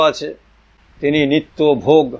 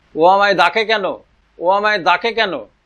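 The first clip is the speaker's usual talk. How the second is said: put-on childish lisping voice; 5 semitones higher than usual. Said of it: "বলছেন আদো আদো স্বরে".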